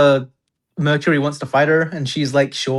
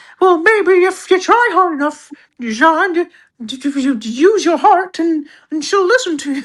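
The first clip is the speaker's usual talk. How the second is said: put-on squeaky cartoon mouse voice, much higher, slower; 14 semitones higher, 4 dB louder than usual. Retelling advice one character gives another, in a Mickey Mouse voice. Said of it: "Don't know why I'm doing a Mickey Mouse voice".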